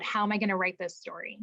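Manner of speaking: normal talking voice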